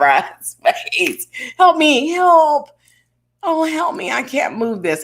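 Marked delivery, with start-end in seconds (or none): 1.6-5.0 feeble, helpless, very high pleading voice. Acting out how asking for help sounds to the speaker, in a put-on weak voice. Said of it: "It just sounds weak".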